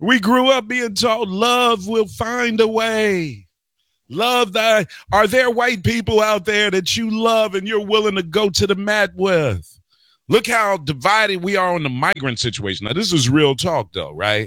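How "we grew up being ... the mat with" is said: mock whining voice. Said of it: "I'm talking like this now".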